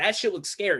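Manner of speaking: ordinary delivery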